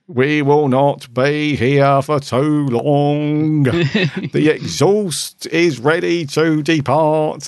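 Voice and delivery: put-on very slow East London accent. Describing the voices they heard, the speaker does a put-on East London accent. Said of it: "East London".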